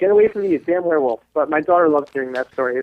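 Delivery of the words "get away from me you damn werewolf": acted, scared, frightened scream. A parent retells the daughter's outburst from the story, retelling a scream. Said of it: "I'm screaming at the top, at the top of her lungs".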